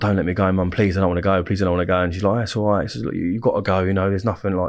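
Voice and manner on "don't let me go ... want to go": acted-out crying and sobbing, pleading. Recalling being sent to school, cuddled by mum on the bed: retelling crying and begging. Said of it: "I'm crying my eyes out".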